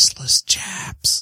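put-on whisper. Retelling a card game, whispering a card choice to a player: imitating own whisper. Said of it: "I whispered to her".

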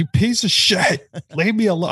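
very high, furious, yelling scream. Retelling a hard boss fight, imitating own screaming at tv. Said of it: "screaming at my T V".

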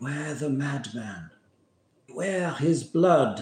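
hushed whisper. Voicing a figure in a wagon doorway warning the party at night: whispering. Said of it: "She whispers to you through the night".

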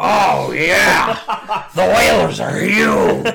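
rough, creaky, rasping voice with swooping pitch. Doing the impression another speaker asked for: Bruce Pritchard Vince McMahon impression. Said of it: "give me a good Bruce Pritchard, Vince McMahon impression".

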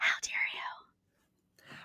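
put-on exaggerated whisper. Describing contestants fighting on a show, imitating an over-the-top whisper. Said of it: "they're just like whispering like".

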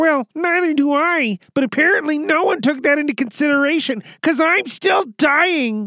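very high cartoon frog-puppet voice. Playing a part in a scene done for an audience, in a Kermit the Frog voice. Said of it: "Kermit the Frog".

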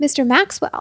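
ordinary delivery

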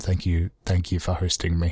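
soft, breathy, hushed half-whisper. Thanking the sponsor for hosting, half-whispering. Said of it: "saying the thank you in a whisper".

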